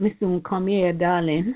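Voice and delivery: speaking in Jamaican style. Retelling what they said to a woman, in a Jamaican accent. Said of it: "and in true Jamaican style".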